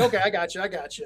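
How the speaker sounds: ordinary talk, nothing marked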